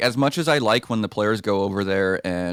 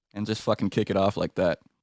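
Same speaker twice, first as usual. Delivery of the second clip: ordinary talk, nothing marked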